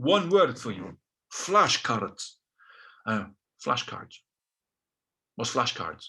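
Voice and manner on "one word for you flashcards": Russian-accented put-on voice. Speaker retells the advice he got about his vocabulary, russian accent. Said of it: "This is a Russian accent now".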